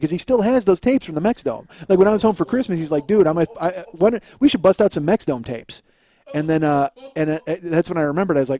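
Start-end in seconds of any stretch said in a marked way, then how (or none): none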